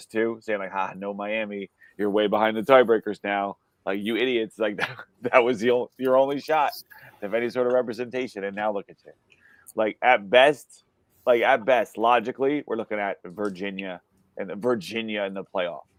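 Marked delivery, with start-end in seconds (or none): none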